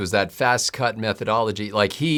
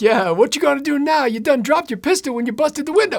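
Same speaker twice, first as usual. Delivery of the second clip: shrill, very high-pitched yell; 4 dB louder than usual. Talking about movie victims stalked by a bad guy, the speaker recalls a joke: imitating Eddie Murphy yelling at screen. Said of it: "he's like yelling at the screen".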